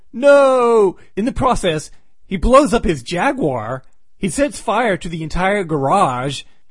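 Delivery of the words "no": loud high-pitched shouting. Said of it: "he yells out".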